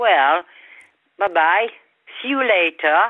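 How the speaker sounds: loud English with a lilting southern French accent.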